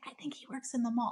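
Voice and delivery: whispered. Recalling once whispering to the listener about a man: retelling a whisper. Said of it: "whispering like that".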